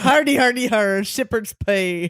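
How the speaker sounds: straining attempted Irish accent, almost pirate-like. Retelling a story about an arrogant flute player, attempted Irish accent. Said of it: "I'm trying to be Irish".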